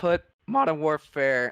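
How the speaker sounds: voice breaking and cracking on the words. Picking a game for the high-vibes tier with a friend, voice cracking. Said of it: "Oh, voice crack".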